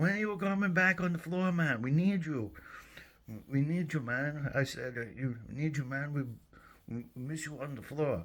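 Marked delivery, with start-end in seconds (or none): 0.0-4.5 put-on Haitian French Creole accent, pitched up. Retelling what Gene said in the break room, imitating Gene's French Creole accent. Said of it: "he goes in his Haitian French in his French Creole accent".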